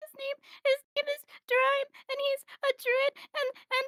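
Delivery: high-pitched sobbing, words broken up by sobs. Playing a lost character asked who she is looking for, sobbing. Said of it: "she is like sobbing".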